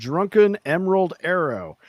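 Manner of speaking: very slow, deliberate, careful word-by-word delivery. Naming an episode title, the speaker says it really slowly. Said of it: "I have to say that really slow".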